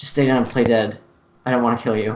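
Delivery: hushed stage whisper. Speaking to her in the middle of the fight, in a hushed tone. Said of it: "in a hushed tone".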